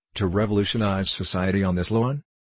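ordinary talk

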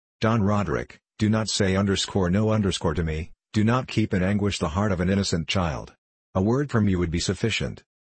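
plain

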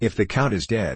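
ordinary delivery

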